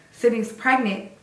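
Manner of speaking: plain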